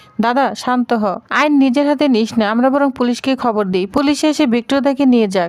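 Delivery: ordinary delivery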